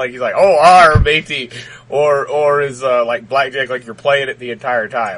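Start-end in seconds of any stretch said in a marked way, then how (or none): 0.4-1.5 put-on, raised pirate voice. Joking about what a pirate character would say: pirate voice. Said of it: "a pirate guy".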